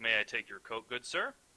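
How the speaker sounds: put-on courteous, polite older gentleman's voice. Voicing a doorman greeting an arriving guest: older gentleman doorman voice. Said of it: "an older gentleman ... He's like".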